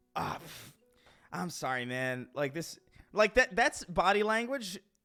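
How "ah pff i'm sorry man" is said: resigned, let-down, breathy whisper with a weary disappointed sigh. Imitating a man slapping his leg, imitating weary disappointment. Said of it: "this is not the first time".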